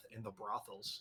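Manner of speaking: hushed, barely voiced mutter under the breath. Voicing a character's quiet jab during a royal welcome: said under his breath. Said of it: "Maximus is going to say under his breath".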